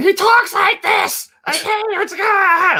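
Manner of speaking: irritating, very high, squeaky cartoon voice. Like a friend doing an annoying high nasal voice to show how grating a cartoon sidekick sounds, relaxed and cheerful. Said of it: "he's got the most irritating voice".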